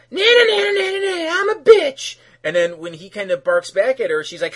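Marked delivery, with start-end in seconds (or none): 0.1-2.1 very high, loud mocking whiny voice. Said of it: "And she's like".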